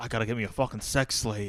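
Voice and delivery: rough, put-on, sort-of Australian accent. Quoting an anime protagonist's line: imitating in quasi-Australian accent.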